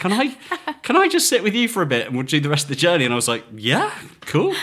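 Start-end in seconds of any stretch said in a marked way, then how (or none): 0.0-3.0 put-on small, high voice with South African accent. Retelling a stranger joining the drive at a petrol station, in a little South African voice. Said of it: "this little South African voice pops in and says".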